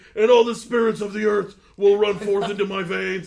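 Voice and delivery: very loud, high-pitched, roaring, huge ranting delivery. Quoting an old wrestling promo: Ultimate Warrior promo voice. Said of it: "He's like".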